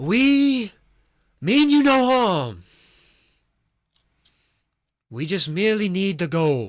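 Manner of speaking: full-throated, very loud, high-pitched shout. Voicing a person yelling across a sacred place: loud yell. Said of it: "it's quite a loud yell".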